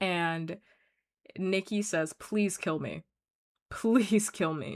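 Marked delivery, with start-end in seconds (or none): 2.1-4.8 earnest, pleading, begging, repeated twice over. Retelling a scene where Nikki begs to be killed: imitating Nikki begging.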